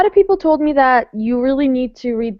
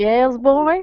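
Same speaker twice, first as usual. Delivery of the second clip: put-on creepy southern drawl accent. Imitating the dad from the audiobook: creepy southern accent. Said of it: "That's how he talks".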